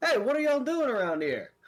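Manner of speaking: very high-pitched, loud shout. Narrating a scene, voicing a man shouting at the players from behind: male voice shouting out. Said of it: "a male voice kind of shout out".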